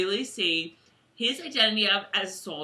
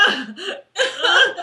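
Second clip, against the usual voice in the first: very high, loud, unpretty blubbering sobs; 10 semitones higher, 8 dB louder than usual. Admitting to being an unpretty crier, showing how she cries with mock sobs. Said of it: "we cry, like".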